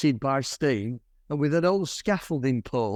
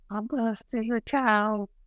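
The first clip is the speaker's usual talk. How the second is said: small, trembling, quavering voice, pitched up; 8 semitones higher than usual. Telling a story, Harry calls back from up a sewer tunnel; imitating Harry's quavering voice. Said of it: "in this little quavering voice".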